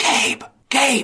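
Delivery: very high-pitched shouted whisper-yell. A player's character calls after Gabe walking away down a hallway, whisper-yell. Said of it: "I'm going to whisper yell".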